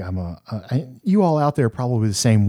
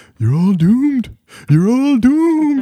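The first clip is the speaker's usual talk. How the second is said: very high, shrill, loud cry; 5 dB louder than usual. Imitating a movie character warning of doom: Crazy Ralph impression. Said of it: "can we talk about Crazy Ralph".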